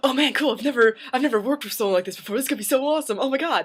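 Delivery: very high, fast, bubbling-over enthusiasm. Retelling the voice teacher's reaction: imitating super enthusiastic reaction. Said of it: "super enthusiastic about this".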